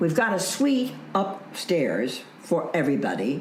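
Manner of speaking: usual speaking voice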